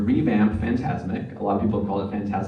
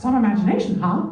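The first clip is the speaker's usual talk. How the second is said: high, put-on cartoon voice. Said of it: "they ended up using my voice for the finale".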